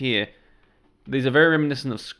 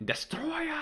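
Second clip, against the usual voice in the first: "Destroyer" hit with big emphasis, very high pitch. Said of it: "I know I did, like, an emphasis there".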